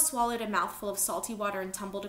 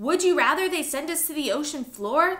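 full-throated, very loud, high-pitched yell; 6 semitones higher, 9 dB louder than usual. Reading a reply in an argument as a tanker approaches: yelling. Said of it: "Leto yelled".

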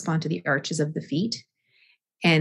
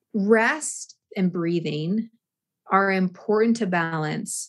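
slow, unhurried delivery. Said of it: "I'm talking slowly through this".

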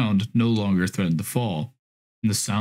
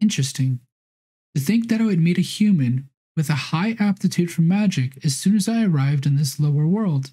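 high, teasing, playful, seductive, a bit innocent; 7 semitones higher than usual. A narrator reads a voice speaking from behind the hero, seductive, playful, slightly innocent. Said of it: ""My name is [name], a Sixth Order succubus belonging to the demon faction. ... Seductive, playful, and even a bit innocent voice sounded from behind him".

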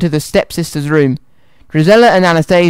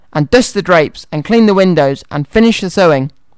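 ordinary delivery

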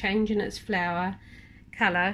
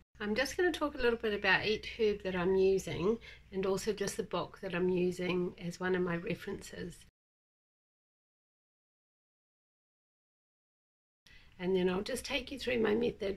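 croaky hoarse voice, quieter; 5 dB quieter than usual. Introducing a video on making wellness tea, croaky voice. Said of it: "sorry for my croaky voice".

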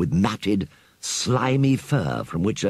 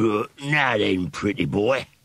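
very slow, drawn-out sneering rat voice. A rat in a story turns his attention to another character, sneering. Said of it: "sneered the rat".

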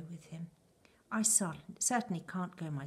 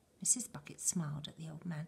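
plain reading voice

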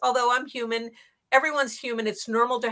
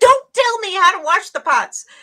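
sudden, shrill, loud snapping scream; 9 semitones higher, 10 dB louder than usual. Retelling snapping at a husband over a pot: imitating her own scream.

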